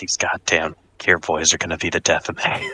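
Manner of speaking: slow, quiet grumbling mutter under the breath. Retelling a story about climbing a ladder, quoting a man: muttered under his breath. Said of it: "he just mutters under his breath".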